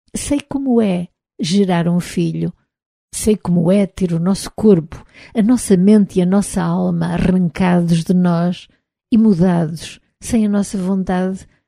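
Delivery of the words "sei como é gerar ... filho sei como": usual speaking voice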